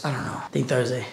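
soft, low voice, nearly gone. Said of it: "When did you lose your voice?".

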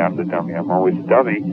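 ordinary talk, nothing marked

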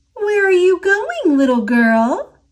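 sweet high voice. Narrating a story where a dragon blocks a girl's path; sweet Dragon voice. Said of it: "Dragon asked in a sweet voice".

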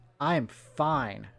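forced through gritted teeth. After bonking his head, he answers a familiar voice asking what happened; through clenched teeth. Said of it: "Finn's words were forced out through clenched teeth".

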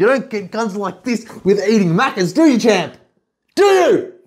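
full-on, high-pitched hollering yell. Talking to the other speaker, yelling. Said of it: "Stop yelling at me".

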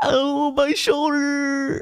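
put-on very high, whiny babyish toddler voice. Retelling what an arrested man said, mimicking a whiny toddler. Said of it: "He sounded like a 2-year-old".

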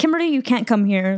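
usual speaking voice

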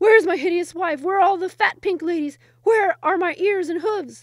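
very loud, high, breathless, spluttering outburst. Reading a tale aloud, the sultan, still recovering his breath, speaks sputtering. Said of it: "he sputtered".

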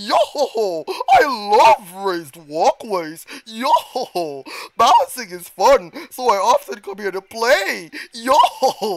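loud, goofy, made-up game-character voice. While playing a game, voicing a character he gave a voice: made-up character voice. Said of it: "that's the voice I gave him".

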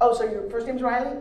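ordinary talk, nothing marked

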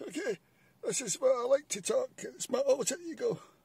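goofy, silly, very high voice. Speaker showing listeners the alter-ego voice they like to talk in: silly funny voice. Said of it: "Here's my funny voice".

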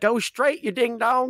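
very high-pitched, loud hollering bellow. Voicing a driver riding away, yelling at his horse. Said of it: "yelling at his horse".

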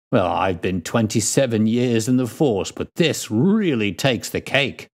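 plain

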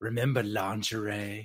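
wistful voice, letting words drift out. Quoting a movie character who is reminiscing: Gyro Captain voice. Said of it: "in the Gyro Captain voice".

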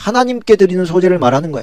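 하나님께 leaned on hard. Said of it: "바알에게 드리는 소제를 말하는 게 아니에요".

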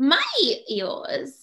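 put-on high, funny little-kid voice. Retelling what a young sister says at breakfast, imitating a toddler's funny voice. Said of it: "She has this funny voice".

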